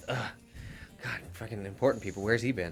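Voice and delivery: grumbling under breath. In a tabletop game, a character grumbles about the new arrivals, muttered under his breath. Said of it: "Under his breath".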